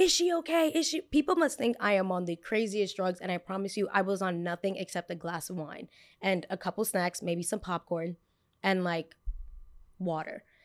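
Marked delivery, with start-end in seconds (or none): 0.0-1.0 put-on screaming, higher. Retelling bystanders reacting to a seizure: imitating people screaming.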